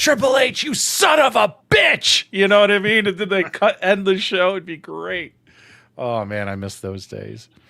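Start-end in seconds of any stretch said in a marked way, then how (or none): 0.0-2.2 loud, drawn-out, furious commentator bellow. Retelling how the commentator yelled at a wrestler: imitating Jim Ross yelling. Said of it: "You'd hear J R yelling at him".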